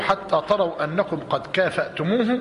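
ordinary talk

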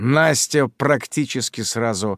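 plain reading voice

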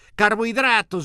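very loud, high shouting in chorus. Several people in a group argument call out an answer together, shouted in chorus. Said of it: "Gritaron dos o tres a coro".

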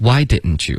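the word why carries heavy stress. Drilling an english question for learners: stress on why. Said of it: "重音是why".

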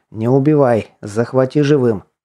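plain reading voice

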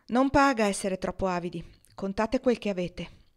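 ordinary delivery, nothing marked

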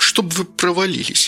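forced through clenched teeth. A woman, leaning back against the door after the gas workers leave, speaks through gritted teeth. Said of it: "Процедила Кира".

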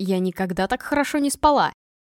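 plain

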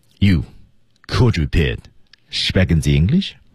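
clear pause after "you", firm low tone.

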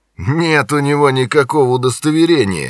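mocking, sneering, snide needling tone. A man taunts someone rummaging in his pockets for an id, snidely. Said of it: "ехидно заявил Джонни".

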